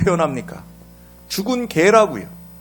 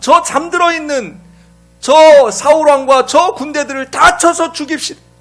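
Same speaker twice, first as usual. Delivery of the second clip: high-pitched, eager, urging tone. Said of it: "다윗의 부하들이 뭐라 그랬겠어요".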